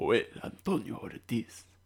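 full Spanish-language TV announcer accent. Podcast host announcing the episode's guest by name, in a full Telemundo accent. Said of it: "I'm going to do my full Telemundo accent".

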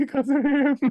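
very high-pitched voice breaking and cracking. Teasing the other speaker by imitating their words: mocking a breaking voice. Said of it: "You're like".

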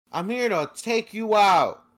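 wooden, high, loud, slow line reading. Imitating an actress's bad voice acting as Sonya in a game: imitating Ronda Rousey's flat voice acting. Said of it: "That's exactly how she sounded".

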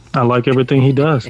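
sarcastic, praising tone. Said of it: "Insert sarcasm".

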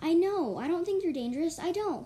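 calm, steady shout. Narrator reads Queen Pebble answering Queen Starless, calm yell. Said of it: "Queen Pebble calmly yelled".

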